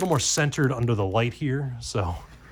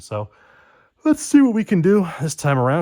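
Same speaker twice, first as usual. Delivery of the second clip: talking through a yawn, higher and louder; 6 semitones higher, 8 dB louder than usual. Starting to open more card packs, yawning while talking.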